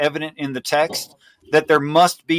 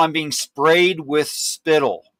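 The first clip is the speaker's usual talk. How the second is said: ordinary delivery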